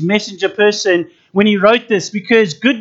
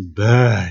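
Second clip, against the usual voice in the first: bad said with the pitch sinking low; 12 semitones lower than usual. Showing how a dropped tone makes bad even worse, falling tone on bad. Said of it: "And if they drop the tone, bad. It's even worse".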